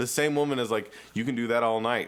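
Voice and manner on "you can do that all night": ordinary talk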